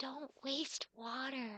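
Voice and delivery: hushed, very quiet half-whisper. Voicing a character gesturing at the barren ground, half-whispering. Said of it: "she just whispers like".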